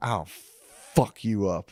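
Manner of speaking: put-on drunken voice. Retelling what a drunk guy at a bar said: imitating a drunk guy. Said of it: "all drunk to the point where".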